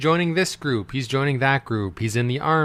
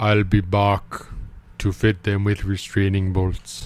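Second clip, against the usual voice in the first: put-on German accent, lower; 5 semitones lower than usual. Speaker voices a machine's line for a listener; put-on German accent. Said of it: "you mean I'll be back, not Bach".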